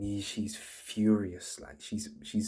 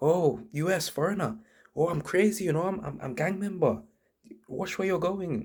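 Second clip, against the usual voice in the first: high-pitched, irate broken English; 9 semitones higher, 4 dB louder than usual. Retelling what a girl with a knife said on realizing you're foreign, imitating an angry woman. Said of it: "And she's getting mad".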